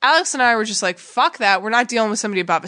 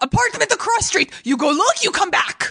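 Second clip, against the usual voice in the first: put-on high female Russian accent, choppy English; 9 semitones higher than usual. Retelling what a Russian woman at a desk asked: imitating a Russian woman. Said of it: "the Russian woman".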